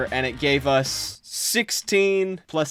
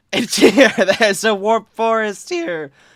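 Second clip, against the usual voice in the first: high, loud, joyful shout with voice cracking; 7 semitones higher, 5 dB louder than usual. Finding a warp forest after a long time mining: voice cracking with happiness. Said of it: "my voice is cracking".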